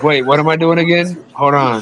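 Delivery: put-on old, confused man's voice. Imitating the politician in the clip who forgets what he's doing: imitating the old politician in the clip. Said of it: "He was like".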